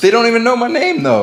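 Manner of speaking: fast, wounded, hurt-sounding, emotional tone. Reacting to being called The Ghost instead of their name, sounding hurt. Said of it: "how hurt that sentence came out".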